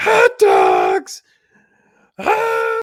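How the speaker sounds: shrill, very high, very loud screaming holler. Retelling a video of hot dog vendors: imitating a screaming vendor. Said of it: "And he's just screaming".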